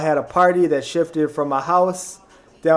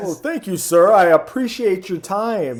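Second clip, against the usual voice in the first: put-on code-switched formal phone voice; 4 semitones higher than usual.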